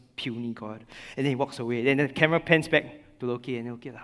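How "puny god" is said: put-on monster voice, whispered. Retelling a film scene where Hulk speaks after smashing Loki: imitating Hulk whispering. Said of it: "he whispers".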